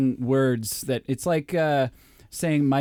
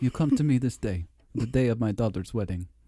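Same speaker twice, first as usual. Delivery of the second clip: clumsy, bad, fake Russian accent. Speaker doing a Godfather line in a bad Russian accent. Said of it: "doing Godfather lines in a bad Russian accent".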